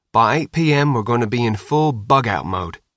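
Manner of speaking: plain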